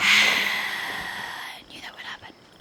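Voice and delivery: slow, whispered, resigned sigh.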